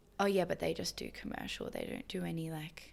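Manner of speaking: offhand, dismissive brush-off with swooping pitch. Imitating how people talk about commercial dancers: imitating a dismissive tone. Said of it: "why are we all saying it like that".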